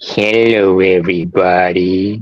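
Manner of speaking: sagging put-on voice. Greeting everybody right after announcing a switch of voice, in a droopy voice. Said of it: "Let me get my droopy voice".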